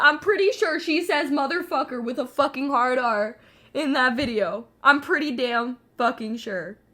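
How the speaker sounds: full-on, very loud shouting. Talking alone about what someone says in a video: yelling. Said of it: "Why am I yelling?".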